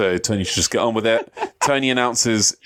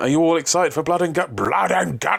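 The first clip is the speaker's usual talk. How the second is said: mocking, fake-excited, high, sarcastic hype; 6 semitones higher than usual. Retelling an interview line from the champ: imitating Kenny Omega's sarcasm. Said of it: "sarcastically hyped the main event".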